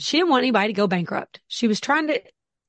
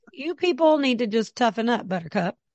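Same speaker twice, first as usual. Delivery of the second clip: ordinary delivery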